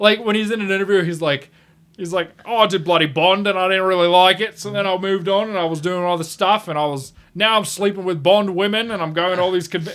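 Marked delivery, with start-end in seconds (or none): 2.5-10.0 strongly Australian, fun-loving, loose, carefree, easygoing rambling voice. Retelling an actor's interview, imitating George Lazenby. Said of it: "he's the most Australian guy ever".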